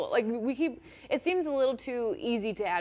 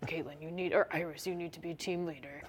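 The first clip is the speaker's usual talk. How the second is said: low, raspy, annoyed and angry voice; 6 semitones lower, 8 dB quieter than usual. Discussing a character's voice, speaker shows it as if mad at Cisco: low raspy voice. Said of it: "like I'm mad at Cisco like this".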